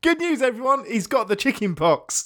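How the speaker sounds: pitched-high, cheery, slow, delighted announcing voice. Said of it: "it just sounds delightful".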